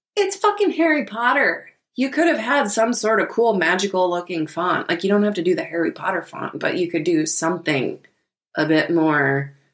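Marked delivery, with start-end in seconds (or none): 0.2-1.7 faint Irish accent with a very high-pitched voice. Speaker reacting to something on screen, slight Irish accent. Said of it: "did you mean to sound Irish there for a second?".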